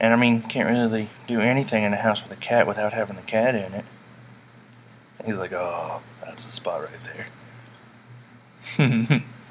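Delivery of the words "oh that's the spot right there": big deep serious voice, breathy, hushed, slow. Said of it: "I pretend he's talking, I make him have, like, a big, deep voice".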